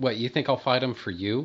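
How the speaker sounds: put-on scornful tone. Quoting Superman's reply once he figures out Lex's plan; mock-scornful as Superman. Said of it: "he says in this kind of scornful, dismissive tone".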